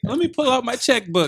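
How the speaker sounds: high, fast, gushing, adoring fan voice. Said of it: "They're like".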